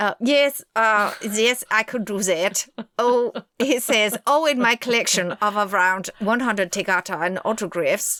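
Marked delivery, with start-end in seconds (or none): 4.5-8.2 put-on German accent. Asked for a German accent, imitating a neighbor: Dorothea German accent impression. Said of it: "I'm just doing my downstairs neighbor whose name was uh, Dorothea, who was German".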